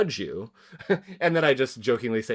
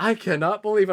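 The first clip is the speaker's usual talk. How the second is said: put-on mocking tone, higher; 9 semitones higher, 4 dB louder than usual. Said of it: "a mocking".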